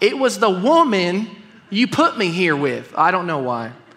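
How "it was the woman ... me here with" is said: put-on down-home country-accented speech. Reading a man's quoted reply, in a country accent. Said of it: "I read this with a country accent".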